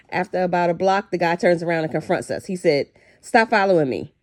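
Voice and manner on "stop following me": put-on menacing tone. Retelling how the man who took the money turned and confronted them: mock-menacing threat. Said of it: "in a real menacing tone".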